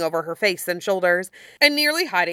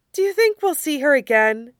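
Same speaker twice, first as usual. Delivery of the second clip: dreamy, hopeful tone, pitched up; 8 semitones higher than usual. Izuna flops back beside Hikaku and asks a question, hopeful. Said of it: "He asks hopefully".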